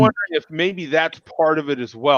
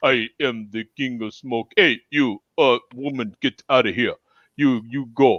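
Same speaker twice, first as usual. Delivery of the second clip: fake, put-on Russian accent; 4 semitones lower, 3 dB quieter than usual. Asked to do the character voice again: put-on Russian accent. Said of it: "I have always given him a Russian accent".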